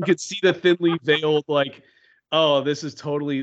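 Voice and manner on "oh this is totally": normal talking voice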